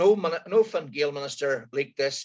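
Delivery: ordinary delivery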